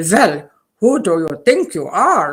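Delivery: put-on heavy German accent, elderly woman voice. Quoting what my grandmother would say, in a thick german accent. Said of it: "in her thick German accent".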